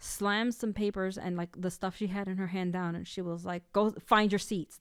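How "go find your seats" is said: put-on angry voice. Retelling a teacher ordering students to find their seats: imitating an angry teacher. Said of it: "just completely pissed off".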